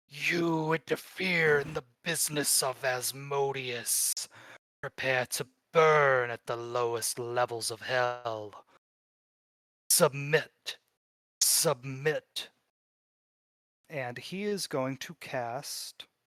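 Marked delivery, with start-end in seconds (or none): 0.1-12.5 layered chorus of three voices speaking in unison. Voicing the Executioner who points at a player: three different voices at once. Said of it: "he says with three different voices".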